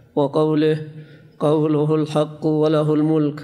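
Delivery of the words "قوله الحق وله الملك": usual speaking voice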